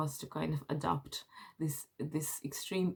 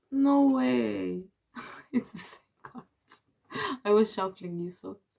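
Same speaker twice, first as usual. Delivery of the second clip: raised, laughing disbelief, talking through laughter, way stretched; 5 semitones higher, 7 dB louder than usual. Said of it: "I'm laughing because you got the same card".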